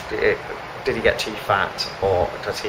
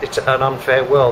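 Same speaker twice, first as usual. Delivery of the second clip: ordinary talk, nothing marked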